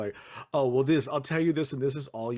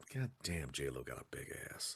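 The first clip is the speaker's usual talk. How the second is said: very quiet, hushed mutter under the breath; 12 semitones lower, 15 dB quieter than usual. Retelling a woman at her desk flipping through People magazine, muttered under her breath. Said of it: "I just hear under her breath".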